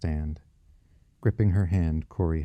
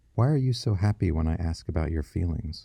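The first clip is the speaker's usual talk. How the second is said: ordinary delivery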